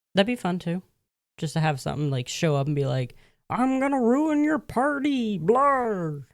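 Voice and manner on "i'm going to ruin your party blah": very slow troll monster voice, pitched up. Pitching a bit where a monster shows up to ruin a party: troll monster voice. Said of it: "what monster was that that ruined the party with that voice".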